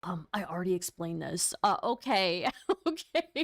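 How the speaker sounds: put-on shamed, cornered, humiliated, faltering voice. Imitating someone humiliated by another's facial reactions: imitating a humiliated voice. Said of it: "You can hear the humiliation in his voice".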